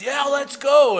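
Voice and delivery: high, screaming cheer like a fan.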